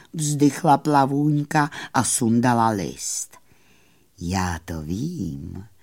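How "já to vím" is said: hushed, rustling murmur with vím stretched and drawn out. Narrator reads the moon answering a little fairy, soft quiet murmur. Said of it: "zaševelil měsíc tichým hlasem".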